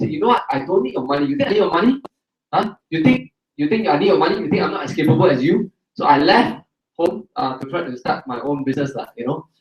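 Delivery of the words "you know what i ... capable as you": usual speaking voice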